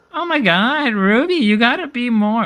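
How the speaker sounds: very high, slow, drawn-out put-on voice. Asked to say it in the Gracie voice, speaking to Ruby: Gracie voice. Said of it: "says it in your Gracie voice".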